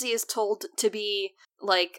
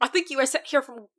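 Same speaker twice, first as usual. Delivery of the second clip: bad put-on Irish accent that fizzles out; 3 semitones higher than usual. Retelling what a man said to his buddy, trying a failed Irish accent. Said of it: "I can't do an Irish accent".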